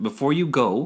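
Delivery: normal talking voice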